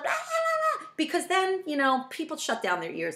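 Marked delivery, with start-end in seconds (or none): 0.1-0.9 very high, frantic, flying-off-the-handle outburst. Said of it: "It's not like I flip".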